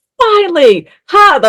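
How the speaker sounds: very high, gleeful cry with cackling. Retelling her own reaction while smacking her husband: retelling a gleeful yell. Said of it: "I was cackling with glee because I was yelling".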